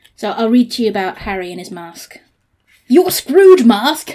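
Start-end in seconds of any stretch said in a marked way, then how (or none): 2.9-4.2 very loud, shrill, high-pitched yell. Reading a story aloud, voicing the father: yelling. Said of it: "Ray Gruber yelled".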